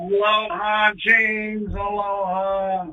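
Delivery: put-on tipsy, sloshed, drunk, drawn-out speech. Introduced to his pal Hollering James, saying hello, sounding drunk. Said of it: "You sound like you had a few too many".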